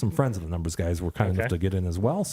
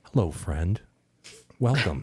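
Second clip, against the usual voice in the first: hushed, whispering voice. Reading a beer website's text aloud as if it speaks: whispering. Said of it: "it whispers".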